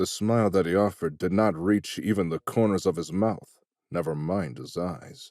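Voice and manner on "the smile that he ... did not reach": ordinary delivery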